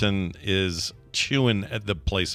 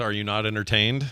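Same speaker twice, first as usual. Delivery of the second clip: plain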